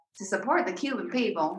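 soft Southern American accent. Asked by the others to say the phrase again, say it in a southern accent. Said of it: "say it again".

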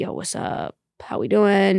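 slow, easygoing, relaxed, laid-back casual tone. Showing how one talks when shutting off with close people: casual greeting voice. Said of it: "you say that a lot in that same voice".

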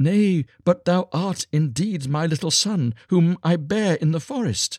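high, crying exclamation, crying out. A beggar woman kneels to the star child who disowned her, crying out. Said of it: "she cried, and fell on her knees".

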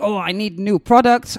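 ordinary talk, nothing marked

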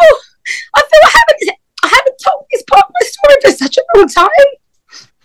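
talking through tears, very high-pitched crying voice. Telling the story of going to hospital while pregnant, crying while talking. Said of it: "I'm crying again".

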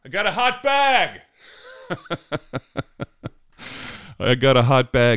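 mock slow, high, drawn-out yell. Retelling how an airline agent shouted at a bag check: imitating a man yelling. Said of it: "he yells".

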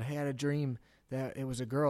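ordinary talk

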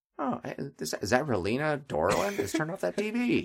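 mock mildly annoyed, high, swooping voice. Voicing an imagined crowd member reacting to the TV: mildly annoyed background extra voice. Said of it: "reacting with mild annoyance".

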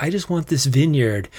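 ordinary talk

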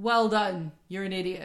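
mock sarcastic tone. Analysing a scene, voicing the woman's reply to the man: retelling a sarcastic remark. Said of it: "She's being sarcastic".

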